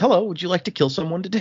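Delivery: very friendly tone with the pitch lifted. Retelling the scene where the sword speaks to her: friendly Nightblood voice. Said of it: "very friendly".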